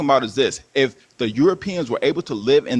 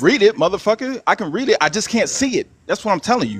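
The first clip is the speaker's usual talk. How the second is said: emotional, agitated, worked-up, high, deliberate, insistent; 7 semitones higher than usual. Arguing with another man about reading the big screen, emotional. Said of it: "You're emotional. Stop being emotional".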